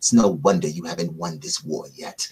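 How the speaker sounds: pretend-annoyed mumble under breath. Retelling a reply to the captain while keying off the radio, mock-annoyed mumble. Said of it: "I'm mumbling it".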